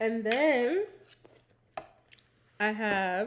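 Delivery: talking with mouth full, while chewing. Showing snacks to viewers while eating: talking with mouth full. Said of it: "I'm speaking with my mouth full".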